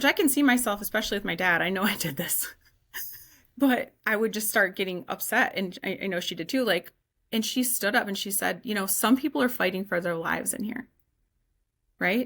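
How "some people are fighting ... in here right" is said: usual speaking voice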